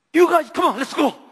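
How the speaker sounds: angry tearful outburst in English, high and fast. As student club president, retelling urging the students to leave: acting out an angry, tearful plea. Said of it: "막 영어 쓰면서 막 눈물 펑펑 흘리면서".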